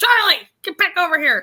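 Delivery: stern yell, projected across a distance. Retelling a scene where Sayid calls Charlie back: imitating Sayid yelling. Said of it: "He's yelling at Charlie".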